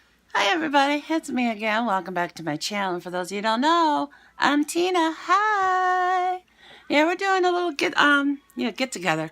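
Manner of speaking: raspy, hoarse voice. Greeting viewers at the start of a get-ready-with-me video, hoarse voice. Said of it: "my voice is hoarse again".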